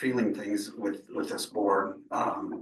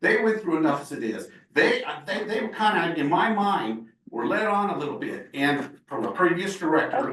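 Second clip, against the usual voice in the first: heated, raised, angry yelling, pitched up; 7 semitones higher than usual. Answering Director Martinez about what the Lopezes went through: yelling angrily. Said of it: "You can lower your voice".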